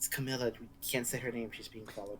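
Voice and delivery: very quiet half-whisper in a put-on voice. Voicing a character who half-whispers a warning to Therius: half-whispering in character. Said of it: "I'm gonna whisper to Therius".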